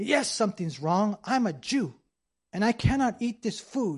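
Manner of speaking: play-acted upset man's voice. Retelling a lonely man's complaint at a retirement home: imitating an upset man. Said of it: "he was this upset".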